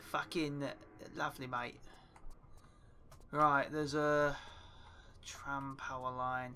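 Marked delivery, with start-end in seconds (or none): 0.1-1.8 put-on London Cockney accent. Arriving in London, so switching to a put-on Cockney accent. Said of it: "we have to do a Cockney accent".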